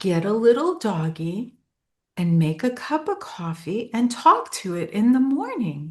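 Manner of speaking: acted-out sweet, loving motherly voice. Retelling Mom's parting advice, imitating a sweet, loving voice. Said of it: "she had this voice that was so sweet and so loving".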